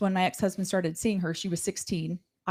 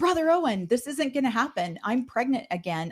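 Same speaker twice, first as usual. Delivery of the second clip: mock yelling, high-pitched; 5 semitones higher than usual. Retelling how she yelled back at Brother Owen: retelling her own yell. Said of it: "And I just yelled at him".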